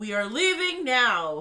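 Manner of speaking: big, loud, booming declaration. Ordering others to leave at once: booming voice. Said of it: "I use my booming voice".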